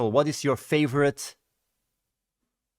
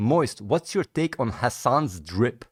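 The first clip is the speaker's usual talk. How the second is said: normal talking voice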